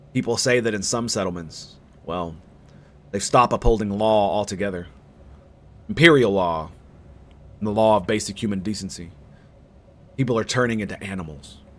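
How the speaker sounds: very low, hushed, under-the-breath voice. Narrating a story, a boy answers her ladyship's question: lowered voice. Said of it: "The boy lowers his voice".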